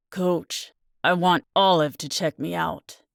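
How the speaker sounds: speaking through gritted, clenched teeth. Justin tells Coach Burns he wants Olive to check him out: through gritted teeth. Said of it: "he says through gritted teeth".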